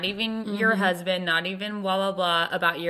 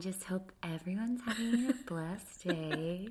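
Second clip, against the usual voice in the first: put-on soothing social-media story voice, quieter; 11 dB quieter than usual. Mocking a friend's way of talking in her stories: imitating Macy's Instagram story voice. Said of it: "a very specific Instagram story voice".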